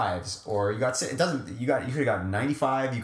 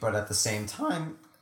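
voice breaking and cracking badly; 3 dB quieter than usual. Speaker mid-explanation to listeners, voice cracking terribly. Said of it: "my voice cracked terribly there".

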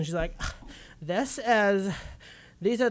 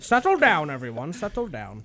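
vague, odd, put-on Indian accent; 4 semitones lower than usual. Host calming the studio after an umbrella gag: put-on accent, maybe Indian. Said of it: "Is that Indian?".

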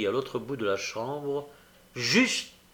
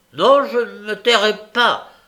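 high, very loud, raised voice; 8 semitones higher, 11 dB louder than usual. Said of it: "reprit Nancy sur un ton très élevé".

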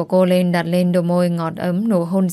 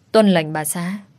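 ordinary delivery, nothing marked

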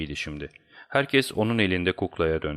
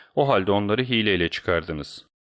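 ordinary delivery

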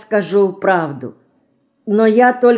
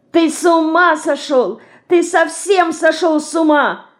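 horrified shout, very high-pitched; 9 semitones higher than usual. A girl answers a boy's sudden talk of marriage, shouting in horror. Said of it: "с ужасом закричала Динка".

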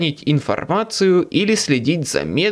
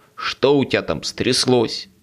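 ordinary delivery, nothing marked

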